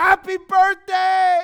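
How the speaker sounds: shrill, very high, loud, top-of-the-lungs excited scream. Acting out a mother greeting her child on his birthday: screaming with excitement. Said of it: "She screams at the top of her lungs".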